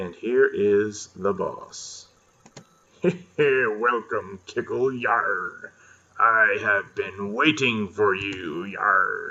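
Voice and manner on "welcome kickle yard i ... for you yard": very slow, drawn-out put-on pirate voice. Playing through a game, voicing the boss as he greets the player, pirate accent. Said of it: "Gotta give him a pirate accent".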